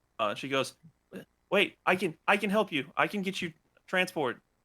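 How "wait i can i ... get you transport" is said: breathless, winded, panting voice. Voicing a young woman who ran after the players, out of breath. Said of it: "she's running out of breath".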